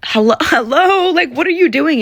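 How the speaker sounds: play-acted, exasperated, frustrated, very high call-out. Retelling calling out to a man at a Manchester show: retelling own frustration. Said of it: "I know that I got frustrated".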